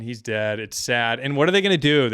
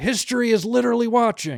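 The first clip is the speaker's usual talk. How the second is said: very high, emphatic, declaiming speechmaking delivery; 11 semitones higher than usual. Retelling what was said in a speech: imitating Joe Biden. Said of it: "He's like".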